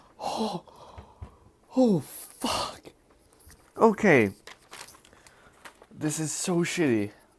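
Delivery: high, pained hot-mouth sound. While eating spicy food, the speaker reacts with a mouth burning from spice. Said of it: "it's so spicy".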